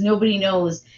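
plain

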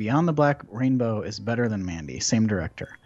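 normal talking voice

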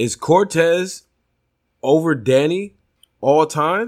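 high-pitched, slow, dramatic delivery.

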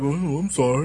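put-on meek, sheepish voice. Retelling how a big brother answered a scolding: imitating a meek apology. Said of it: "he would just shrink away like".

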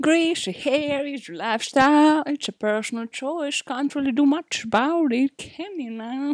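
creepy pervert character voice. On a podcast, doing a voice the other speaker has heard before, Herbert the Pervert voice. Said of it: "are you doing the Herbert the Pervert voice again?".

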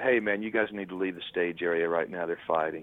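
very low, hushed voice. Retelling a road manager telling the band to leave: imitating a very low voice. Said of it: "in a very low voice and said".

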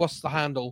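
normal talking voice

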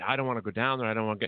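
put-on fearful voice. Speaker retells a TV scene where the little guy refuses the basement, acting scared. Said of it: "And he got so scared".

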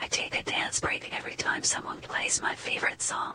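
hushed, barely voiced, very soft whisper. Telling a secret after announcing it: whispering. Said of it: "I'll whisper a secret".

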